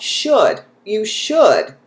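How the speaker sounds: "should" stressed, high and loud. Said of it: "I had a button pushed".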